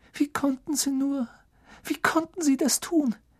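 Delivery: very high, shallow, uneven, breathless gasping breaths. Hermine, after she and Ron hold him back, speaks with shallow, uneven breathing. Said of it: "Hermine atmete flach und unregelmäßig".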